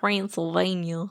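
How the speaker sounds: Southern US accent. Saying the place name again after being asked for a different way: southern accent. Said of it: "I was thinking southern".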